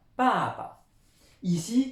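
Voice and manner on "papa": "papa" with the first syllable leaned on. Teaching a chinese word in french, with stress on first syllable pa. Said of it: "on insiste bien sur la première syllabe".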